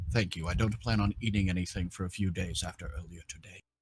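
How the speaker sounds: very low, very quiet, hushed murmur under the breath. Game narrator voicing Archie after he eats a berry, murmured under breath. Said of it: "he'll just murmur under his breath".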